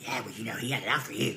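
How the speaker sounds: low, sly, sneaky put-on snake voice. Imagining the listener picking up the phone, imitating a sneaky snake voice. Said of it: "with your sneaky snake voice".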